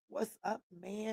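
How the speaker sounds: very quiet, high, excitable voice, hushed. Greeting someone so that they ask who is talking, in a Chris Tucker voice. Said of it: "that Chris Tucker voice".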